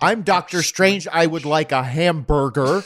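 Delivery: stiff put-on American accent. Joking about a film role, a speaker does Benedict Cumberbatch's fake American accent. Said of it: "Grinding your teeth to make that American".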